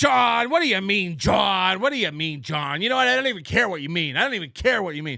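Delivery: mock scornful, aggressive, disdainful, dismissive tone. Imitating how someone reacts to a confusing chat message: imitating Opie with disdain. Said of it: "Opie will do this thing where he's just like".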